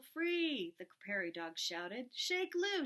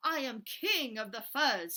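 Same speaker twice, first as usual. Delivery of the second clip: loud, snarling, growling boastful voice; 5 dB louder than usual. Reading a story aloud, voicing Big Bark's line as a snarl. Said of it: "he snarled".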